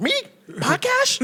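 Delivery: very high, shrill, nervous yelp with a lisp. Retelling how a nervous guy answered a podcast invite: imitating a nervous man with a lisp. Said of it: "Motherfucker started sweating immediately".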